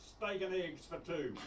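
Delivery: speaking very loudly. Retelling how Dad ordered at the fish shop, in a very loud voice. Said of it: "in a very loud voice used to say".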